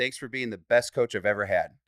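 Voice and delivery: plain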